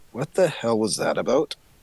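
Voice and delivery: hushed stage whisper. Playing a character who asks another character something: whispering in character. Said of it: "I'm gonna whisper to".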